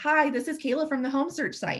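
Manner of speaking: energetic, interested, excited upbeat voice. Demonstrating how to open a call without waiting: excited, interested energy. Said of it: "I'm picking up my energy a little bit and my tonality sounds excited and interested".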